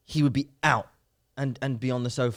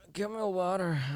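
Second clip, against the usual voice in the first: put-on sickly invalid accent, pitched up; 6 semitones higher, 6 dB quieter than usual. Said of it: "He puts on an accent".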